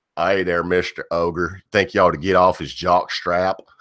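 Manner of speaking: homemade put-on West Virginia accent. Quoting a commenter from the comment section: West Virginia accent. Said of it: "That was my best West Virginia accent".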